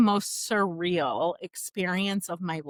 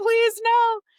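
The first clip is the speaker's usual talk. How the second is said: crying, begging plea, high and loud. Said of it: "crying and begging and pleading".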